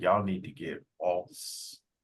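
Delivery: put-on whisper. Retelling what somebody unseen whispered: imitating someone whispering. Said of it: "you didn't see somebody whispering".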